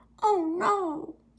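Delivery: ridiculous, very high-pitched cartoon voice. Retelling own reaction to paint going dark: ridiculous cartoony voice. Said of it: "Like a ridiculous cartoony voice".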